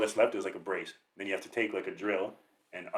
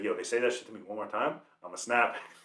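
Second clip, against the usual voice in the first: ordinary talk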